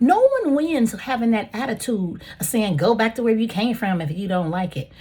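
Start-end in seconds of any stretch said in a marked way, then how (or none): none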